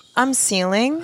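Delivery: put-on snobby, posh prep school boy voice. Brainstorming names, the speaker voices a ceiling fan as a snobby prep school boy. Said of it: "like a snobby, like prep school boy".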